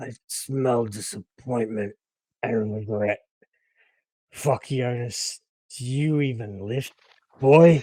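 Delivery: words forced through deep, rumbling, gurgling chest voice. A storyteller voices a character who struggles to get words out, in a gurgling voice. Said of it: "you hear this gurgling".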